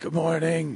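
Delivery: high, fake sick-sounding voice. Imitating another speaker's morning greeting: imitating a put-on sick voice. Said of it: "He had sick voice".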